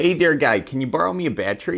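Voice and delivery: low, put-on stock Midwestern accent, laid on thick. Describing how people online judge Midwesterners, the speaker does a put-on Midwestern accent. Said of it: "someone's from the Midwest if they sound like this".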